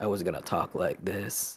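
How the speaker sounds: soft, low sultry voice.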